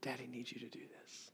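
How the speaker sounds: very quiet, soft, close whisper. Down on one knee close to his daughter, retelling how he whispered to her. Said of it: "and I whisper".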